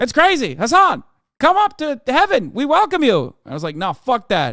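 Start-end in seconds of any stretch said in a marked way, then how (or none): 0.5-3.3 put-on mid-Atlantic accent at a high pitch. Retelling God calling the speaker up to heaven: God with mid-Atlantic accent. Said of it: "God had a mid-Atlantic accent".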